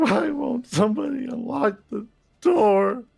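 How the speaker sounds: sobbing, pleading voice. Voicing a trapped driver begging for the door to open: sobbing.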